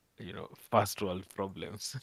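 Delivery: ordinary delivery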